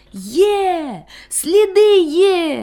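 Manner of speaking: loud, high, gleeful shout, "Є" drawn out. A dog searching the road with friends suddenly cries out: joyful loud exclamation. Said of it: "радісно й голосно вигукнув".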